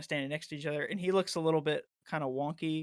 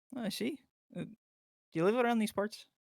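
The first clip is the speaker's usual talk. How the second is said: put-on brief, slight Canadian accent, pitched up; 6 semitones higher than usual. A character questions travelers passing through their town: slipping into a Canadian accent. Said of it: "I went Canadian there for a second".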